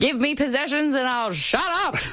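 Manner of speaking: loud, high, full voice. Repeating a quoted line on request, the speaker says it in a loud voice. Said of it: "Can you say that in a loud voice?".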